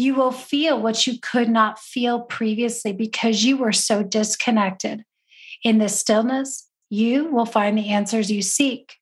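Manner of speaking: put-on whisper. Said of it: "a whisper".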